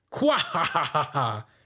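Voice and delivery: slow, drawn-out character laugh. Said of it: "Morgan's is like".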